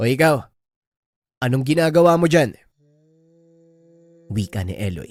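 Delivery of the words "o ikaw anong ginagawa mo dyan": high, loud yelling shout. Reading a horror story aloud, a character calls out to a creature: shouting. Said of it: "Dahil sa ginawang pagsigaw".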